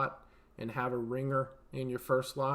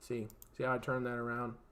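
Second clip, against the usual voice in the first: normal talking voice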